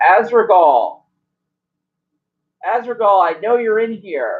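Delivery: high, loud yelled call. In a tabletop game, her character senses something wrong and calls down the hallway, yelling out. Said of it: "And she yells out".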